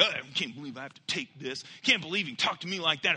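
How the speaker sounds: mumbled, muttered under breath. Retelling what he muttered when frustrated at a guy, mumbled under breath. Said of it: "I even mumbled under my breath stuff like".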